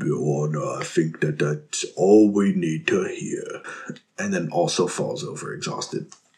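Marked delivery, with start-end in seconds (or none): 0.0-3.6 put-on British voice, lower. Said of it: "He sounds British".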